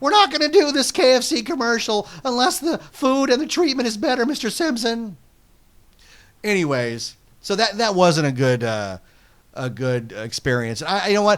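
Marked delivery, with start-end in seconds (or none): 0.0-5.2 voice cracking, pitched up. Joking about a KFC commercial, doing the pimply teen from Simpsons voice. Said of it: "or the pimply teen from Simpsons".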